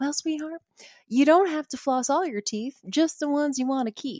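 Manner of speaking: put-on high, thick, heavy Southern accent, laid on. Quoting a woman who always called people sweetheart, thick Southern accent. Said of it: "really thick Southern accent".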